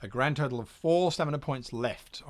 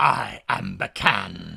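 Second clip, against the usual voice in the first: low, loud, rough rasping voice; 6 semitones lower, 6 dB louder than usual. A robed figure in a dark room introduces itself, in Bacan's raspy voice. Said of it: "rasps a voice".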